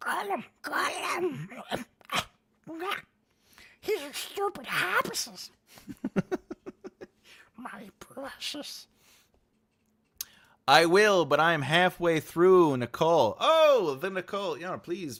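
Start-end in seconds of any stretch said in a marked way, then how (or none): 0.0-8.9 very high, very slow, drawn-out creature voice. Describing how the speaker reads Tolkien aloud, in a Gollum voice. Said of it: "unless I get the Gollum, I'm like".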